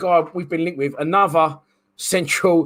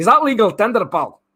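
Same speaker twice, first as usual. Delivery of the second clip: put-on Scottish accent; 4 semitones higher than usual. Reading out a player's details, then doing a scottish accent impression. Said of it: "That's my Scottish impression".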